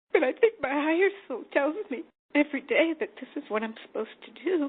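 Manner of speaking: crying while talking. Answering what her higher self would say, crying while talking. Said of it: "I'm crying right now".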